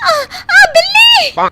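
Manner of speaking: very high-pitched, shrill, loud scream. In a drama, Leela cries out when a cat gets into the kitchen: screaming. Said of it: "तुम चिल्ला क्यों रही हो?".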